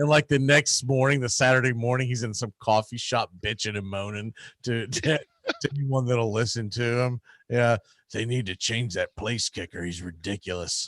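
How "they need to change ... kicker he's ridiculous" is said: put-on creepy old man voice, lower, quieter. Retelling a man complaining in a coffee shop, creepy old man voice. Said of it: "You got that creepy old man voice going".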